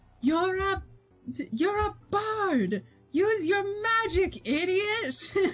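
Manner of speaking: loud yelling voice.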